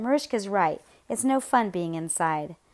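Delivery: ordinary delivery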